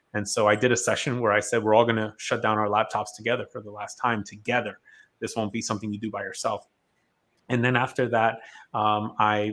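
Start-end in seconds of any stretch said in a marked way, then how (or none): none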